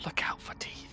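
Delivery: very soft, hushed whisper in a character voice. Casting guidance on a companion checking a chest: whispering in character. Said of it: "As I whisper".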